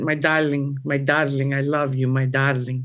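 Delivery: put-on sweet, cute Cuban Spanish accent. Recalling what a late father used to say: father's cute Spanish accent. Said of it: "the cutest Spanish accent".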